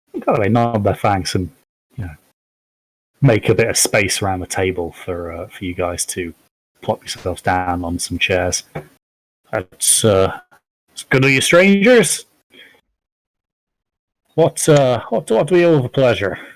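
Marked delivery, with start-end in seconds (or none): 9.5-16.4 put-on loud, swooping, vague, hard-to-place West Country accent. Greeting strangers who are being given seats at the table, in a put-on accent, hard to place. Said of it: "How long have you been waiting to do that accent".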